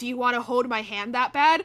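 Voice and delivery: mocking, taunting, showy tone. Retelling what a guy in line said when the speaker held his hand, really loudly. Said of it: "he said really loudly".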